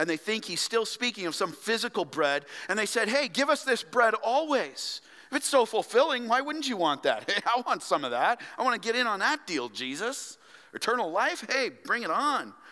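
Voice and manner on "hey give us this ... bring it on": sarcastic, high sing-song delivery. Explaining a Bible passage, retelling the crowd's reply, in a mock-sarcastic crowd voice. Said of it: "They respond sarcastically to him in 34".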